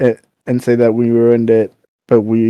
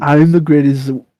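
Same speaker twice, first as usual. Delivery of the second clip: put-on vaguely Scandinavian accent, pitched higher; 4 semitones higher than usual. Quoting a cartoon athlete from the show: Arnold Schwarzenegger impression. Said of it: "he's fucking Arnold Schwarzenegger".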